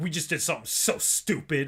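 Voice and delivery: put-on furious, raging voice. Retelling a friend's phone call about a bad trade: imitating a friend's furious voice. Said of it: "your voice was just dripping with rage".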